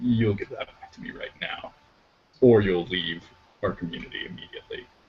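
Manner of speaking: quiet, cheerless tone with all brightness gone. As a stranger examines her sword, the character's cheery tone drops away. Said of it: "her cheery tone drops out of her voice".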